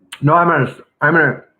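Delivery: speaking through a mouthful. Guest answers a question about living in Detroit, talking with mouth full. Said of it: "I have a mouthful of corn".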